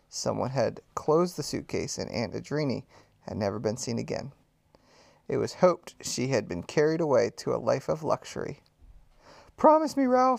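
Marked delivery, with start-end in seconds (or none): 9.5-10.4 very high, crying-out voice. Reading a story: Ralph's mother cries out to her son, crying out. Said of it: "cried his mother".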